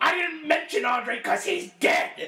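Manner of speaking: angry high-pitched yelling. Retelling a promo where Paul Heyman yells at a fan: imitating Paul Heyman yelling. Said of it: "But him yelling at the fan".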